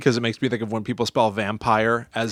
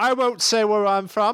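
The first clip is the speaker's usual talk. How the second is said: very high-pitched, vaguely British fake accent; 11 semitones higher than usual. During a comedic bit about old newspapers, in a put-on kind-of-british accent. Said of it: "What is that?".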